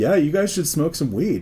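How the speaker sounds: ordinary talk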